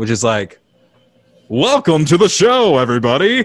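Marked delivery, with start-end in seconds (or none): 1.5-3.4 cheesy put-on radio announcer voice, loud. Listing cheesy show voices, doing a hacky radio announcer voice. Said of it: "the hacky radio voice".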